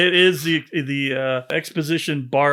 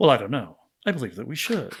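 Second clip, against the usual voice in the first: put-on posh, upper-crust, old-time film cadence; 2 semitones lower, 4 dB quieter than usual. Imitating how an actor delivers his lines: imitating an upper-crust cadence. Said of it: "His cadence is different in it".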